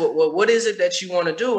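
ordinary talk

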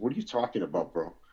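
sassy, snippy, dismissive tone with attitude. Retelling own reply to an older convict: retelling a reply with attitude. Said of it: "with an attitude".

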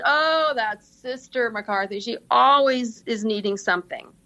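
mock-sarcastic, joking tone. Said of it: "sort of been very sarcastic".

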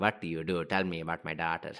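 put-on Indian English accent, male voice. Retelling how a girl's father phoned her match: Indian accent. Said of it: "that's my Indian accent".

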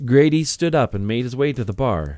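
ordinary delivery

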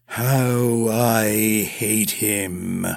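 tired, weary, flat droning monotone. Narrating a character who collapses on his bed after shredding curtains: weary droning. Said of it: "he droned wearily".

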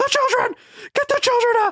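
shrieking, very high-pitched scream. Retelling a blooper from a movie, imitating Will Ferrell screaming. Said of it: "he's, like, screaming".

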